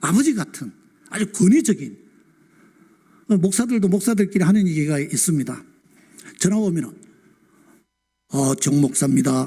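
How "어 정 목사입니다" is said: put-on solemn, pious holy voice. Imitating how pastors answer the phone: put-on holy voice. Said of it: "이 홀리보이스 알죠?".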